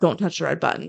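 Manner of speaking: normal talking voice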